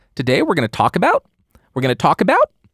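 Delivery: exaggerated upspeak, rising on each about. Illustrating disliked upspeak with a deliberately bad example: exaggerated upspeak. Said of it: "that's a really bad a really exaggerated example".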